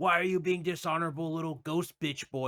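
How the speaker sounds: mild, half-shouted yell. Retelling a game story where the uncle screams at the speaker: imitating uncle screaming. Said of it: "my uncle screams at me like".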